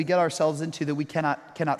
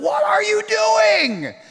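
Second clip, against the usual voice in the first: very high, very slow, shrill, drawn-out yell; 7 dB louder than usual. Recounting a moment of yelling at him, retelling a yell. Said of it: "I yelled at him".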